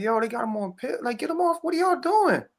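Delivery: put-on high, tearful begging through crying. Retelling pleading with family to stop a brother's pills: retelling own crying plea. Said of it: "And I'm crying and stuff".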